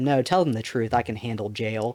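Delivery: bone-dry, flat, expressionless deadpan, acted out. Retelling what mom said to dad on the phone, retelling mom's deadpan line. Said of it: "In a true deadpan voice".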